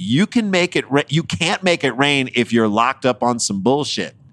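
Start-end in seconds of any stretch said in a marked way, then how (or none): none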